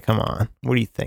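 put-on voice full of attitude. Retelling how a character answered about the absent father: imitating Mary's attitude. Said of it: "She kinda says it with, like, an attitude".

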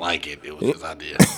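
breathy, whispered superhero voice. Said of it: "you sound like Batman".

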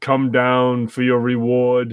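wild, crazed possessing-spirit voice. Recounting the plot, voicing the spirit that possessed a companion, crazy spirit voice. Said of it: "And all this is so crazy voice".

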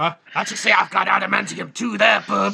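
rough, creaky, rasping tough-guy voice. Imitating what the superhero would say: Wolverine voice. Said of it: "is what he'd say".

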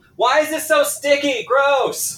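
put-on very high, shrill, girlish yell. Voicing a girl in a game scene: yelling girl. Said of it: "You hear her yell".

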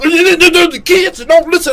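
play-acted very high, dragging yell, "the" stretched. Speaker retells her child's mother complaining about the kids: retelling a yell. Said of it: "Why you yelling at me?".

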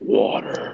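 one word suddenly dropped into a very deep voice. Retelling how a cousin spoke to her mother at night: imitating a girl's deep voice. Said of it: "make a really deep voice for no reason".

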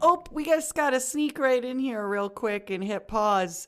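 put-on Midwestern accent. A show host pauses before a segment, speaking in a midwestern accent. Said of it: "that's me speaking some Midwestern".

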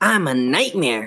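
triumphant, gloating exclamation while laughing. A living ventriloquist dummy taunts Chris as she grips him: exclaiming while laughing. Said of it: "He blinked again. He giggled. His mouth open, making his grin grow wider. He tried to tug out of [name]'s grasp, but she hung on without even realizing she was holding him. "But you're a dummy," she squealed. He giggled".

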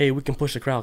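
ordinary talk

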